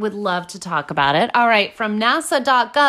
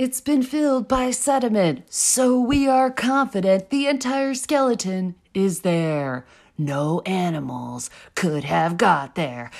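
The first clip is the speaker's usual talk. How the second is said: eerie, theatrical storyteller voice, spooky and dramatic. Speaker reads out a quote as a dramatic rendition: spooky dramatic reading. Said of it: "You tried your spookiest".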